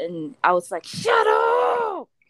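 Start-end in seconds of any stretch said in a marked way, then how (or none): 0.8-2.0 put-on shrill, all-out scream, pitched way up. Retelling yelling at an aunt who was talking: imitating yelling at the top of lungs. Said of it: "I yelled to the top of my lungs".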